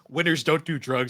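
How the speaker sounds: play-acted deadpan, very matter-of-fact, no fuss. Retelling a game character's line: imitating a matter-of-fact delivery. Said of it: "in this very matter-of-fact way".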